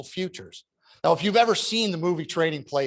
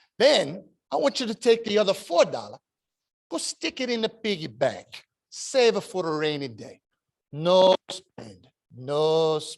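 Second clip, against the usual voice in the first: put-on thick, laid-on Italian accent; 5 semitones higher than usual. Retelling what his Italian grandmother told him as a boy: heavy Italian accent. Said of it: "This heavy Italian accent".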